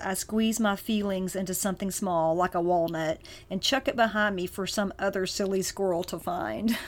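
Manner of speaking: normal talking voice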